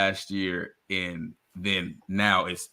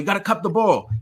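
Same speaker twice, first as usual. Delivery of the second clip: pitched-up put-on Irish accent; 12 semitones higher than usual. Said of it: "he has an Irish accent".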